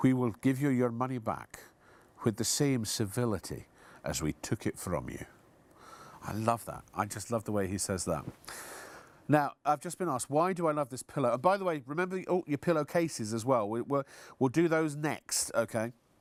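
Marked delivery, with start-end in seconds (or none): 0.0-5.2 put-on soft, silky, gentle Glasgow Scottish accent. Quoting the glasgow gentleman who answers the phones: soft silky scottish brogue. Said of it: "in his what beautiful sort of soft, silky Scottish brogue".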